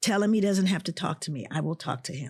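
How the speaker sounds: ordinary delivery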